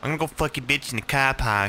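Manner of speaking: poorly attempted Boston accent. Trying out a Boston accent after another player demonstrates: bad Boston accent. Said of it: "I can't do a Boston accent".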